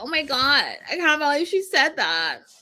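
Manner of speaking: high, whiny, swooping, complaining man's voice. Quoting a man's complaint in his whiny voice: mock-whiny high voice. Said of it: "in his whiny voice".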